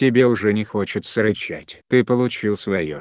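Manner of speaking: plain reading voice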